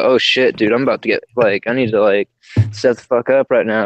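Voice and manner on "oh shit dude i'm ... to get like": usual speaking voice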